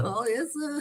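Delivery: put-on very high, eager-to-please, overly polite voice. Imitating the sellers who always smile and grin: imitating someone grinning. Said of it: "they always smile at you and fucking grin".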